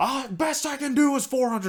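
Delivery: high, loud, smug dealer voice.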